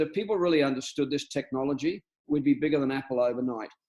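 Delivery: ordinary delivery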